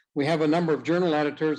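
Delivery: fast, rushed delivery.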